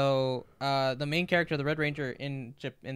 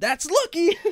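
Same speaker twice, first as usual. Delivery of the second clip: shrill, very high, full-volume loud scream; 10 dB louder than usual. Describing a show's character who shouts when things work out: imitating a character screaming. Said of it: "And he screams".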